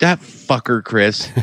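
put-on, angry golfer voice. Imitating a golfer left out of the picks: imitating Max Homa being mad. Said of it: "he's so mad when he hears this. If he listens to it, he's like".

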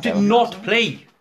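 very high, loud, slow, heated and angry. Arguing that the others did not play the game: angry. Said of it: "Have we noticed how angry he gets?".

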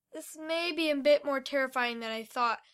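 ordinary delivery

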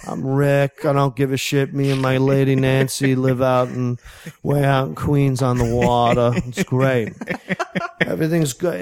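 smooth, easygoing, laid-back talk. Retelling a story, imitating a restaurant manager named Rick: imitating Rick's smooth way of talking. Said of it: "Rick Smooth talks like this".

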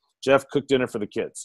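plain

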